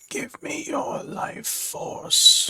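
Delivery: hushed, whispered, breathy muttering creature voice. Game narrator voices the creature the players are fighting, muttering creature. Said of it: "it mutters".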